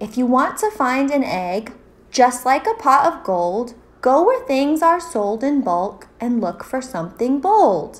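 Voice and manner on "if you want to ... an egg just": usual speaking voice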